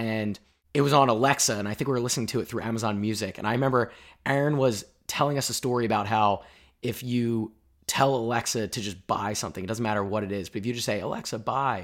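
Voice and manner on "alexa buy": speaking under the breath, hushed and kept down. Telling a story with an alexa device nearby, talking low. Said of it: "I'm talking low".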